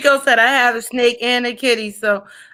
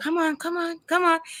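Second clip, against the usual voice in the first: hushed, urgent, high, scared, coaxing half-whisper; 6 semitones higher, 8 dB quieter than usual. Scared of big Rottweilers beside her tiny dogs, she signals a woman; retelling a half-whisper. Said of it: "and I'm whispering".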